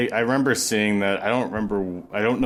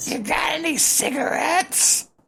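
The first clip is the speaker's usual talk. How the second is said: very high-pitched, raspy voice. Describing Toad from the Super Show, adding a line in his voice: Toad voice, raspy and high. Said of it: "like a raspy high pitch".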